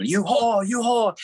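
play-acted, very high-pitched, shrill yell. Speaker describes Kinison's on-stage phone bit with audience members, retelling Kinison's yell. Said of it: "he would just yell at him".

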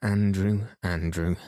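ordinary delivery

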